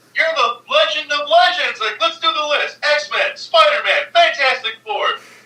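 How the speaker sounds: very high, put-on, starstruck, gushing, freaking-out voice. Retelling a man meeting Stan Lee and freaking out, imitating starstruck freaking out. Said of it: "He starts freaking out".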